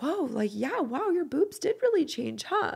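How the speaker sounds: sugary, sweet, very high-pitched tone. The speaker retells what David said coming up behind her at the mirror: imitating David's sweet voice. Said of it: "Like in the sweetest voice".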